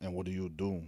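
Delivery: deep, low, soft-spoken voice. Answering another speaker's question and asking one back, deep soft voice. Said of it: "He asked that shit in a deep ass voice, soft ass voice".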